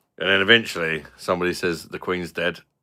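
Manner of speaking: normal talking voice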